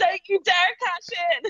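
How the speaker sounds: put-on, all-out, high-pitched screamed outburst. Retelling watching the match, imitating own screaming: imitating own screaming. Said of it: "I was just screaming".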